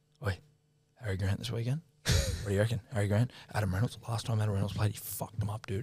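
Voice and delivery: hushed, conspiratorial, secretive whisper. Retelling a coworker sidling up in a loud room: imitating someone whispering.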